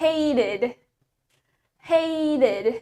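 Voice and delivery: american accent. Explaining accents to learners, the speaker says the word in an American accent. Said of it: "While in American accent".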